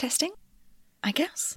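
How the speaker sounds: hushed whisper. Alone in an empty office, testing something, whisper. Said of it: "Not even sure why I'm whispering".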